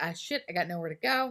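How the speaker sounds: usual speaking voice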